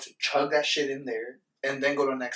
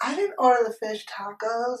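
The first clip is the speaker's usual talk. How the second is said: put-on very high slurred drunk-guy voice; 9 semitones higher than usual. Describing a drunk guy at a table denying his order: imitating a drunk guy.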